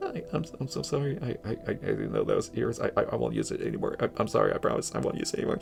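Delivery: mock frightened stuttering, whispered. Retelling how a coworker answered after he scared her: imitating a scared stammering apology. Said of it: "like I just scared her".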